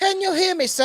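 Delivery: put-on very high British accent with a boyish voice. Retelling a kid in an online match who was asked for a British accent. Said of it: "My little British boy".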